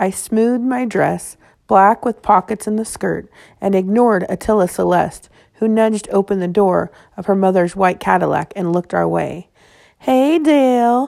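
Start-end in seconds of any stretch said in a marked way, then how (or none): 10.0-11.1 slow, high, drawn-out, stretched-out words. A girl calls to Dale from her mother's car, drawing out the words. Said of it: "drawing out the words".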